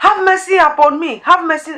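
shouting out, high. Retelling a blind man's cry for mercy: imitating Bartimaeus shouting. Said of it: "He was shouting".

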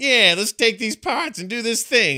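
very high, loud goblin character voice. Retelling what the game's goblin says when it helps you: imitating a goblin's voice. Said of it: "And he's got that voice".

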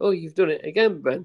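delighted teasing tone. Retelling how a stepmom greeted an oversleeper: imitating stepmom's glee. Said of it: "my stepmom would gleefully tell me".

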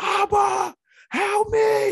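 loud, high-pitched yell.

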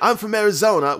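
put-on strong South London accent. Speaker quotes what a man said, in a strong South London accent. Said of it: "with like a strong like South London accent".

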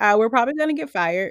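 ordinary talk, nothing marked

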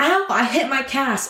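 put-on sudden high-pitched cry of pain. Retelling how someone screamed after hitting a cast: imitating a scream. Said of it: "she screams".

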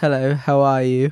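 British-accented speech. In a group trying out accents, asked for a British hello: British accent. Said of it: "give me a British hello".

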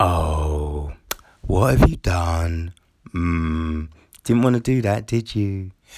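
play-acted slow, patronizing voice, long drawn-out "oh". Imitating an irritating voice that talks down to you, mock-condescending. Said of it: "it's talking down to you".

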